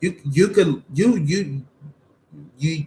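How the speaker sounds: stuttering, stumbling, words catching, repeated false starts. Telling someone they are beautiful, stuttering. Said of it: "I'm stuttering".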